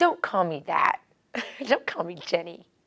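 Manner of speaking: small, cheeky, sassy little voice. Retelling what she said while being held, imitating Jenny's little sassy voice. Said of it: "in a little sassy voice".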